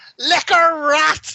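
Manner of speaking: put-on broadest Belfast accent, yelled, high and loud. Retelling a man shouting in at a door, imitating Darren's thick Belfast accent. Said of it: "in the thickest Belfast accent you've ever heard".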